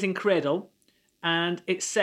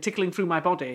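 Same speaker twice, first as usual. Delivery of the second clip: ordinary talk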